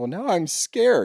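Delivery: high-pitched fake crying, weepy voice. Venting that this drives them nuts, imitating Gretchen fake crying. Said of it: "and like fake crying".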